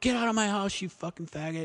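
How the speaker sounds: high, rapid, furious enraged scream. Retelling how the mom screams at the younger brother, imitating a mom screaming. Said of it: "And screams at the other kid".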